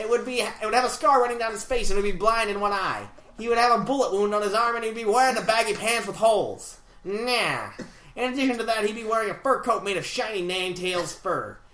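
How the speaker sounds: put-on laid-back old-time twenties gangster voice. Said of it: "read this in a twenties interviewer voice".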